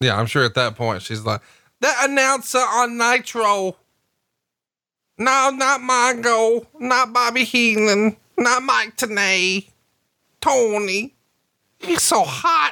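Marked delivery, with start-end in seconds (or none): 1.8-12.7 put-on woman's voice, higher pitched. Imitating a wrestling valet swooning over an announcer: Francine impression. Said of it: "What'd you think of my Francine impression?".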